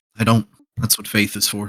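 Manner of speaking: soft, hushed half-whisper. A narrator voices a character answering a challenge about his crew, half-whispering back. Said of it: "He kind of whispers back".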